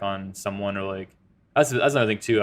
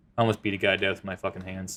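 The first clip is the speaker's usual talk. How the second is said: mock-cold flat monotone, quieter; 4 dB quieter than usual. Retelling a man's answer to his question, imitating a cold monotone. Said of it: "like monotone and like cold".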